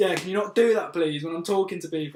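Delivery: play-acted fed-up, annoyed voice. Retelling what a guy said when he got pissed off: imitating an annoyed person. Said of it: "he just got really pissed off with me".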